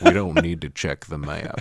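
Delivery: animated cartoon character voice. Recalling a scene from a Goofy movie: Goofy voice. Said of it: "a Goofy movie at this point where he's like".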